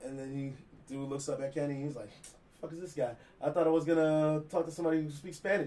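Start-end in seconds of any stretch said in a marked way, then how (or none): none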